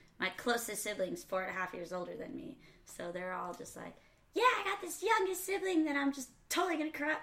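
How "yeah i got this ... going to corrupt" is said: very high voice, pitched way up. Retelling what older siblings said, imitating siblings in a higher voice. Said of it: "higher voices than you do in the story".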